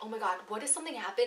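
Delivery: panicky, fast, soft, hushed, rattled-off rush. Retelling the moment the helicopter door opened before a jump, retelling freaking out. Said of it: "I'm like freaking out".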